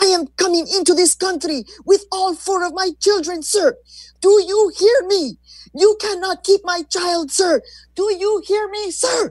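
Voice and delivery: put-on forceful, very high shout with heavy Mexican accent. Reading a mother's stand against an immigration agent: firm yell in thick Mexican accent. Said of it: "she yelled up at a man who looked like a tree and said firmly in her thick, unmistakably Mexican accent".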